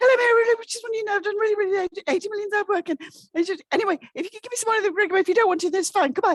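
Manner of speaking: squeaky, very high babble delivered at great speed. Imitating women nervously asking for money: imitating a very high-pitched rushed ask. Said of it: "speak at a pitch that only dogs can hear, and really quickly".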